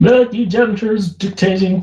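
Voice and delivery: put-on American accent, very high-pitched. Speaker addresses people who object to removing names from tags, american accent. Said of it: "Don't know why I'm doing that in an American accent".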